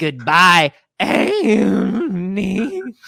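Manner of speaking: swooping movie-style alien creature voice. Recalling a theme ride's farewell line, the speaker does an E.T. impression. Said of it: "do an impression of E T saying your name".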